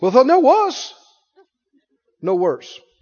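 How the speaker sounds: imitated South African accent. Quoting what a man said, in his South African accent. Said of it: "He has an accent, South African accent".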